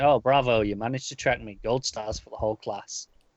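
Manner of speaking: put-on, mock sarcastic delivery. Retelling a comic scene, quoting a character: acting out a sarcastic line. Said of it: "she's very sarcastic".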